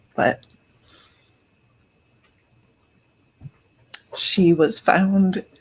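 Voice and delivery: fighting back tears. Talking about a young lady who was found, holding back tears. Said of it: "I am trying not to cry anymore".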